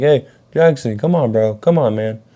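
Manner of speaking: play-acted loud yelled call. Retelling climbing a play place, imitating own yelling for a friend. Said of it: "yelling, like".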